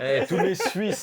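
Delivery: high, loud laughing.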